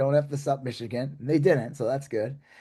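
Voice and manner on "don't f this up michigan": normal talking voice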